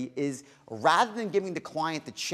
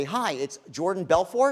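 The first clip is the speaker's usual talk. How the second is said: pitch rising at the end on "Belfort"; 2 semitones higher, 3 dB louder than usual. Speaker showing how to turn a phone introduction into a question: rising at the end. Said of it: "I raise my voice up at the end".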